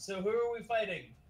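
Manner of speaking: high, stretched shout. Voicing a character asking who they are fighting: yelling. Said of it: "And so I yell".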